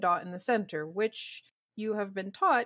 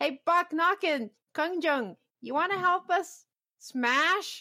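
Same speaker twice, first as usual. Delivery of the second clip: goblin voice, pitched high; 9 semitones higher, 4 dB louder than usual. Voicing goblins who call out to the players: goblin voice. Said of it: "the goblins behind you go".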